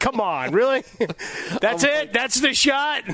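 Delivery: put-on exasperated disbelief. Echoing the other speaker's reaction to a shot, mimicking his exasperation. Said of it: "I heard the exasperation in your voice".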